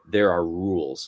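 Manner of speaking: eerie, unsettling, deep demon-like bass voice. Retelling what a horned shadow at the bedside said, in a creepy, unsettling voice. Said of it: "like in a really creepy, unsettling voice".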